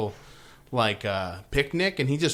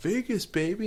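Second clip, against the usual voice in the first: excited put-on partier voice, higher pitch; 8 semitones higher than usual. Comparing his joy to a movie scene: excited Swingers guy impression. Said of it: "that Swingers movie when that guy's all like".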